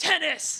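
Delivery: tennis hit hard with intense, all-caps stress. Explaining that all-capital words must be said intensely: intense stress on 'tennis'. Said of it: "you have to say it really like intensely".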